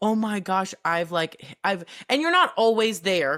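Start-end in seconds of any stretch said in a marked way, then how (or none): 0.0-1.9 acted-out crying, tearful. Retelling a coaching session where they started crying: imitating own past crying. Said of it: "I started crying going".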